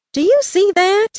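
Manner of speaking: eager, excited, very high-pitched delivery. Narrator reads a man stopping and pointing toward something, excited question. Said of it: "he asked excitedly".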